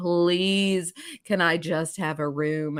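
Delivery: acted-out, tearful, crying voice. Retelling begging the clerk for a room after returning: imitating own crying plea. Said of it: "So I came back there and I'm crying".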